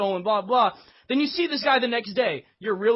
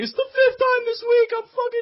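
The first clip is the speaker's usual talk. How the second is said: mock tearful sobbing, higher and louder; 13 semitones higher, 5 dB louder than usual. Acting out a robbed man on his knees: imitating sobbing while talking. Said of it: "in fucking sobbing tears behind you on his knees".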